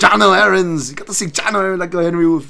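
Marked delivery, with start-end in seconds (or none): 0.0-0.9 loud, exaggerated, overdone Danish or Dutch accent. Reading out match results, the speaker calls a player's name in an overly Danish or Dutch accent. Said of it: "say it in an overly Danish or Dutch accent".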